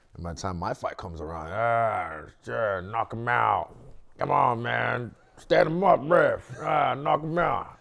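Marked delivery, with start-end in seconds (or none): 1.5-7.7 very loud, drawn-out put-on American accent, drunken yelling. Imitating drunk fight fans yelling at the fight: imitating drunk fans in an american accent. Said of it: "that's a pretty good American accent".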